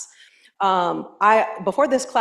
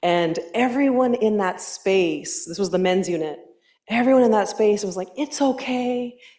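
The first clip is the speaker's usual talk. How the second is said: ordinary delivery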